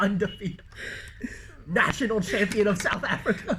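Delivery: high-pitched, laughing, mocking sarcastic tone.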